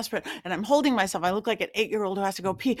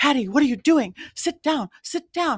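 put-on loud, high, escalating shouted yell; 6 semitones higher, 5 dB louder than usual. Recounting how he yelled at her in the moment, retelling a yell. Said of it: "he got louder and louder".

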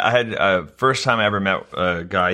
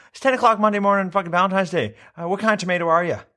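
shrieking, very high, shrill outburst pitched way up; 10 semitones higher than usual. Retelling what an arrested man kept yelling at a cop, imitating his yell. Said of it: "thing he kept yelling at this cop".

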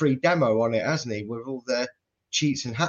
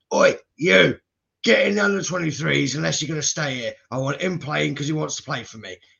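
rough, creaky, bossy-sounding voice; 2 semitones higher than usual. Imagining what Sean Dyche will tell a player, in a Sean Dyche impression. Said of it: "That's my best Sean Dyche impression there".

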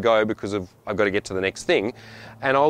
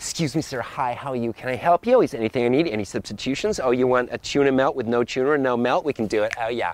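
overeager, gushing, eager-to-please American clerk voice. Imitating an american shop worker greeting a customer: imitating an overeager american server. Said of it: "they're like".

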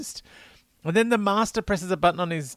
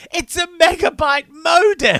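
shrill scream at full volume, very high, piercing; 13 semitones higher, 9 dB louder than usual. Recapping a scene where a character opens a cupboard, imitating a scream. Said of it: "screams out".

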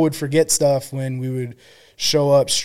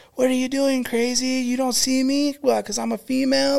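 shrill, very high-pitched female yelling; 11 semitones higher than usual. Retelling a female deputy yelling at a recruit: imitating a deputy yelling. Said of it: "yelling at him".

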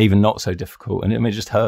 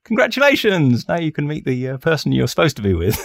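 put-on bouncy, rich, swooping New York accent; 7 semitones higher, 3 dB louder than usual. Speaker retells a violinist's reaction, imitating a buoyant woman. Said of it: "She was really buoyant".

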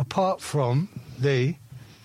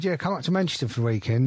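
usual speaking voice

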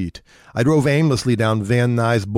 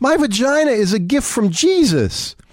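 very high, rapturous, fervent shriek; 13 semitones higher than usual. Reading a story aloud, a character's outburst: screaming with divine passion. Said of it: "Kathy screamed".

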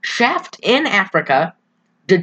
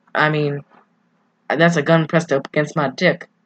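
ordinary talk

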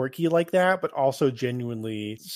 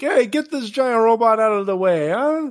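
put-on brash, loud, very high-pitched New York accent; 10 semitones higher, 7 dB louder than usual. Retelling a scene, voicing a man heading for the evacuation center, New Yorker accent. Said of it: "Just like a New Yorker".

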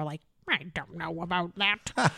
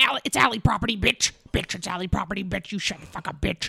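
foul-mouthed, coarse, abusive troll-woman ranting voice. Retelling a viral video of a woman picking rhubarb: imitating the rhubarb woman's voice. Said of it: "this troll of a woman who talks like this".

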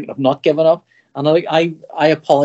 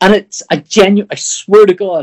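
ordinary talk

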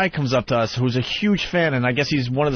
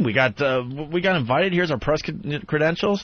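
normal talking voice

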